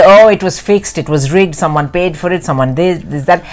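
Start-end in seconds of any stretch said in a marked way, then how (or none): none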